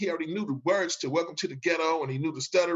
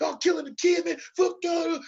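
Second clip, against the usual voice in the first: mock, put-on flip-out rant, much higher pitch; 12 semitones higher than usual. Retelling how a performer lost it at the crowd on stage: imitating a thug flipping out. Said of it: "It's thug like flipping out".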